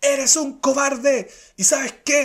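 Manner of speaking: put-on high, loud shout. Retelling how a man confronted the speaker: imitating someone shouting. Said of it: "empieza a gritarme".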